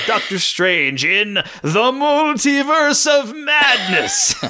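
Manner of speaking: eerie, very high ghostly tone. Talking about a fun movie title, say it in a spooky voice. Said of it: "fun name to say in like a spooky voice".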